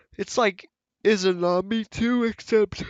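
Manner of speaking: loud, very high talking mid-yawn. Reviewing a game character's ability, the speaker talks through a yawn. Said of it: "I don't know why I'm yawning".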